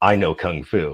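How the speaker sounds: normal talking voice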